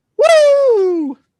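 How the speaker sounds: very high, very loud, drawn-out belted "woo". Trying the wrestler's woo when asked: Ric Flair woo. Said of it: "Ric Flair's woo".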